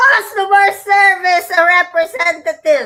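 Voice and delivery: loud, exasperated yelling. Retelling shouting into an automated phone line: imitating yelling at a phone. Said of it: "you're gonna be yelling at the phone saying".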